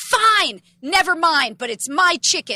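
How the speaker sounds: slow, angry, indignant huffing tone. Retelling a quarrel over chicken with the aunt: imitating an angry aunt. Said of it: "And she goes storming out".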